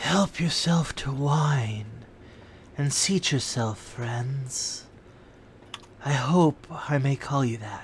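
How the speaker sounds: dry, raspy voice throughout. A game master voices a masked stranger greeting the players' characters: dry, raspy voice. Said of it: "Even the person's dry, raspy voice".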